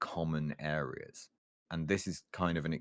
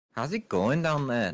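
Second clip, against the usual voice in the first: attempted, put-on Liverpool Scouse accent, pitched up; 8 semitones higher, 8 dB louder than usual. Put on the spot to do a Scouse accent before the topic changes, attempted Scouse accent. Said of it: "You have until I've changed the topic to do a Scouse accent".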